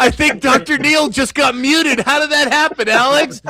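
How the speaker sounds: excited outcry.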